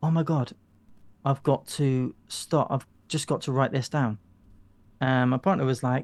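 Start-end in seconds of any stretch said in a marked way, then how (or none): none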